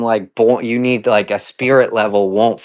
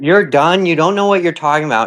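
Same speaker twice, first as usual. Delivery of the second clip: getting mad, higher pitch; 6 semitones higher than usual. In an argument with friends over what floats on mercury, getting mad. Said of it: "Now you're getting mad".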